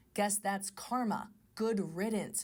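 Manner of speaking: ordinary talk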